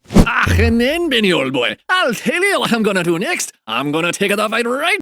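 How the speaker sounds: put-on Scottish accent. Play John Paul telling Benny what he will do next, John Paul with a Scottish accent. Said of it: "he's Scottish".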